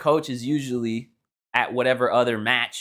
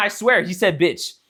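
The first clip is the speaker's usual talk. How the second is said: ordinary talk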